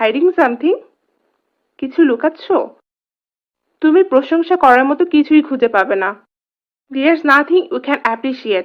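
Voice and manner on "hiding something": pitch lifts upward at the end of something. Translating phrases from bengali, asking it as a question: rising question tone on something. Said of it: "এটা যখন আমরা প্রশ্ন করার সুরে বলবো".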